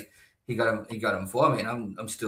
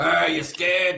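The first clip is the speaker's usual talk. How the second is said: put-on tough-guy voice, high, loud and taunting; 8 semitones higher, 5 dB louder than usual. Acting out a spider on the wall taunting someone: put-on tough spider taunting. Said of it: "they try to look tough".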